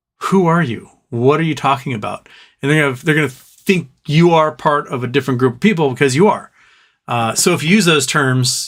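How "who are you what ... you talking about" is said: ordinary talk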